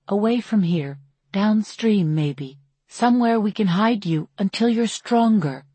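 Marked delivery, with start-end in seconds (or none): none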